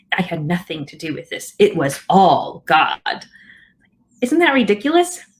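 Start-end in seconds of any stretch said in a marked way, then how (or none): 0.1-3.2 put-on cross, worked-up, heated angry voice. Speaker acts out people who get mad at his suggestion, mock-angry quoted denial. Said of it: "they say in an angry voice".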